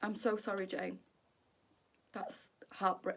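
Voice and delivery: fighting back tears. Answering jane after hearing her sad family news, fighting back tears. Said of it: "I'm not going to cry".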